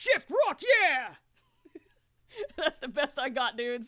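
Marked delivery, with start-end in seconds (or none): 0.0-1.1 loud, belted-out cartoon character voice. A host tries out a voice for listeners, in a Knuckles the Echidna voice. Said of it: "a totally unacceptable Knuckles the Echidna voice".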